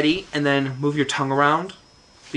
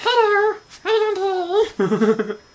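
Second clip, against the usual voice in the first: squeaked out high and slowly. Showing an early ventriloquism act with a hand puppet: Squeaky hand-puppet voice. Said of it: "I used my hand, and I named him Squeaky".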